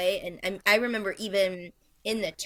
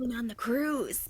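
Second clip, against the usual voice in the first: quiet, hushed stage half-whisper; 4 semitones higher, 3 dB quieter than usual. Retelling a husband's remark while standing at a show: imitating a half-whisper. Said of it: "whispering to me".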